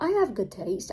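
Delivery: weird, odd stress on the word HAVE.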